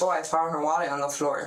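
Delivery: normal talking voice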